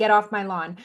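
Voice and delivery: ordinary talk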